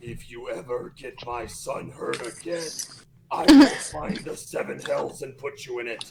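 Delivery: very deep, low, dark, sinister demon voice. Leaning in close over the bag to speak to the man, dark demonic voice. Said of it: "in the most dark and demonic voice".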